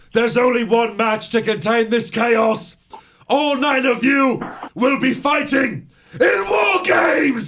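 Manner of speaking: mock furious commanding voice. Retelling an announcement to brawling wrestlers: imitating an angry William Regal. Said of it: "Regal comes out and he's pissed".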